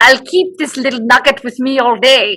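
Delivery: put-on Scottish accent. Redoing a quoted remark on request, Scottish accent imitating Meredith. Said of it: "say it and I'll do it in Scottish".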